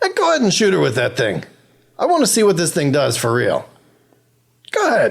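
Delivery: character voice, laughing while talking. Voicing a character who laughs and urges someone to shoot: Gareth laughing while talking. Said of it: "Gareth is laughing and still, and he says".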